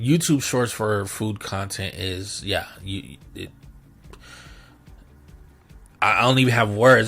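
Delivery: halting, stuttering, tripping over words, lost for them. A speaker at a loss for words, stuttering. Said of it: "That's why I'm stuttering".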